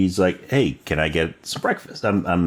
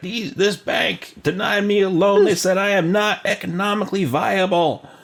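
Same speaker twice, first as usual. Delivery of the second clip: shrill, very high yelling out; 13 semitones higher than usual. Describing a cast member carrying a sign, imitating someone yelling out. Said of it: "he's also yelling out".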